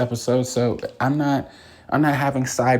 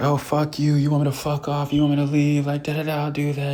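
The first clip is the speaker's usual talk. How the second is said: mock furious, angry, swearing outburst; 3 semitones higher than usual. Retelling how Hannah blew up the spot: imitating Hannah's angry outburst. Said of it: "Hannah blows up the spot".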